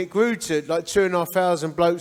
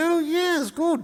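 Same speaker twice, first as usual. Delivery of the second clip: shrill, very high put-on plummy posh accent; 11 semitones higher than usual. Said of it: "I wanna mimic them".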